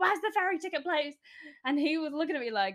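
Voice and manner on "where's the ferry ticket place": high, shrieking screamed delivery. Retelling running up to a man and asking for the ticket place: imitating own scream. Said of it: "I screamed at this man".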